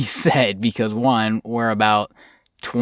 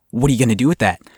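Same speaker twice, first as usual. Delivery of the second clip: put-on severe, stern, loud raised voice; 3 dB louder than usual. Retelling a woman confronting the speaker and a friend, imitating a stern, loud tone. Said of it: "in a very stern, loud tone, she says".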